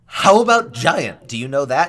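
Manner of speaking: very loud, overdone giant-tongue speech. Retelling a character addressing the Duragar in giant, way too loud. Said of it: "it sounds way too loud".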